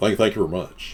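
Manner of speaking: put-on Southern rock-and-roll drawl. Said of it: "sad [name] accent".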